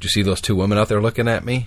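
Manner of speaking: ordinary delivery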